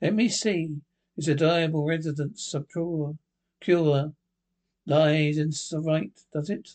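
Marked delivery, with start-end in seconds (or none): none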